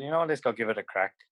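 ordinary talk, nothing marked

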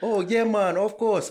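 very loud, very high Jamaican accent. Acting out being asked to do an accent, answering in Jamaican accent. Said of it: "Can you do a Jamaican accent?".

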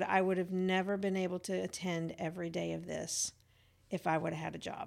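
usual speaking voice

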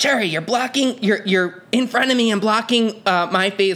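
put-on screaming. Retelling how a fellow performer yelled at her mid-performance, retelling a scream. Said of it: "she's screaming at me".

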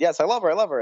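ordinary delivery

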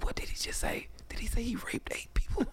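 breathy, hushed whisper. Retelling a man in the group reacting behind him: imitating someone whispering. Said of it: "I heard him whisper".

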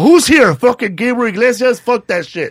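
loud, high yell. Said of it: "And I yell out".

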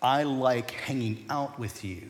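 imitated whisper. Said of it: "the words that he whispered to me".

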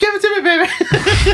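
mock shouting, pretend yell. Answering what one shouts at agave to make it: mock shouting. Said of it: "What do you shout at it?".

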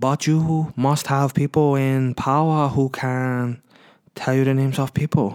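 put-on Chinese accent. Retelling a film scene, imitating Jackie Chan's accented English. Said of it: "he still speaks kind of like".

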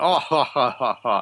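voiced group laughter. Voicing guards who laugh together: guards laughing in unison. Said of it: "they all start laughing in unison".

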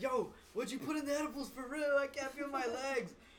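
mock aggressive shout, very high and loud. Retelling how a friend on edibles yelled at the group, imitating a friend yelling. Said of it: "This dude was straight, like, yelling".

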